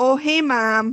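put-on much stronger Minnesota accent. Showing how the accent came out when talking to mom, strong Minnesota accent. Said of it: "my Minnesota accent would come out like way stronger".

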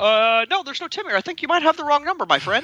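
gushing, overly nice.

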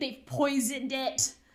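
very aggressive, loud, forceful outburst. Retelling how a customer's girlfriend accused the staff: imitating someone saying it super aggressively. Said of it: "super aggressively".

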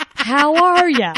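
put-on very high, very loud, toned-down Southern accent. Imitating a man trying to hide his Southern accent with customers: forced neutral Southern accent. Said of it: "Just trying to not be Southern, but he's so Southern it sneaks out".

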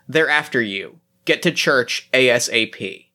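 ordinary delivery

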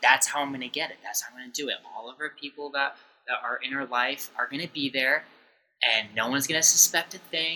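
normal talking voice

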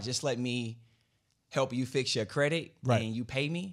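ordinary talk, nothing marked

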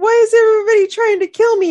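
play-acted, very high, loud, blubbering tearful wail. Retelling a movie scene where a crying woman asks her friend something, imitating her crying. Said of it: "she's like crying and he's like".

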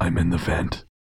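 deep growling man's voice. Reading a ghost story, the unseen voice answers: deep growling man's voice, slow monotone. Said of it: "dropped to a deep, growling man's voice".

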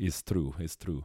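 put-on botched accent aiming Greek, drifting into Slavic. Redoing the Giannis bit in the same voice: failed Giannis impression. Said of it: "it became very, like, uh, Slavic".

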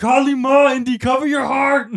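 high-pitched yell. Retelling what a boy yelled on the Star Wars ride in sixth grade, yelling Indiana Jones quotes. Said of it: "I'm yelling Indiana Jones quotes".

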